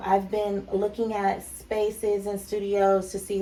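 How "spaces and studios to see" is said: normal talking voice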